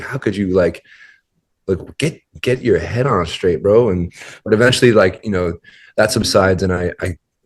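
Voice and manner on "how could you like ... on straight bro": put-on cussing, scolding manner. Retelling going to the wrong airport, imitating cussing oneself out. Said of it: "mildly cussing myself out".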